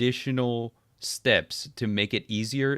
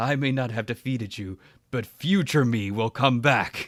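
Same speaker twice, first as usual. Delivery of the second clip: put-on, very dramatic, theatrical, defeated dying-hero voice. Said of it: "a very dramatic".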